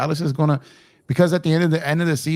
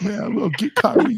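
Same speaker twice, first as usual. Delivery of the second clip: put-on emotional voice, higher pitch; 8 semitones higher than usual. Imitating a fan who pulls up talking about Kyrie: imitating Lakers all day's emotional voice. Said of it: "he always sound emotional".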